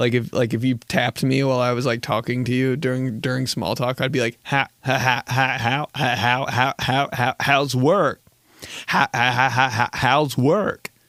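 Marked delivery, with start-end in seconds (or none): 4.4-10.9 glitchy, skipping, stuttering, repeating soundboard clip. Showing how he makes small talk, the speaker uses a glitchy soundboard voice. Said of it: "It's always a soundboard voice".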